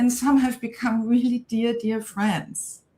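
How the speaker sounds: voice catching, choked up with emotion. Talking about the Sheconomy's founding members, choking up. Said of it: "I'm choking up now".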